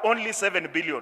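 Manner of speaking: emphatic ONLY stressed with a falling tune.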